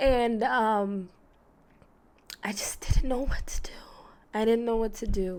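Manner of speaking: tearful speech, crying while talking. Recalling that day, crying while talking. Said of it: "And I'm crying because".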